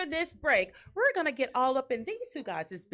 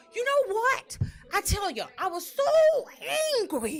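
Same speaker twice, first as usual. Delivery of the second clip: very bad put-on Boston accent, high and slow; 8 semitones higher than usual. Showing guests a bad impression of Coach Franklin: Boston accent. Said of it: "very bad imitation of Coach Franklin and his Box-, Boston accent".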